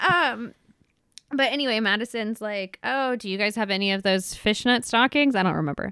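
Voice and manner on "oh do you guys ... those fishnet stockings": usual speaking voice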